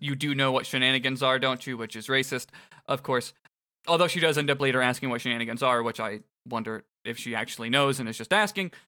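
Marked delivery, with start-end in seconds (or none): none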